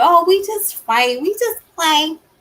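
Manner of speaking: high-pitched, offhand, like it's nothing. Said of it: "most women would sit there and say".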